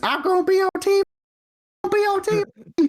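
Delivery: mock screaming at top of lungs. Retelling running around the living room: imitating screaming at the top of lungs. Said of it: "screaming at the top of my lungs".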